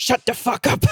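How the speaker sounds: put-on thick Czech accent. Retelling a story, quoting Bianca's reply to a joke: imitating Bianca's thick Czech accent. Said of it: "in her thick Czech accent".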